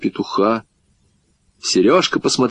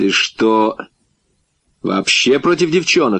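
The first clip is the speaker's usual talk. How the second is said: ordinary delivery, nothing marked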